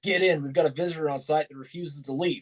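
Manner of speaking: usual speaking voice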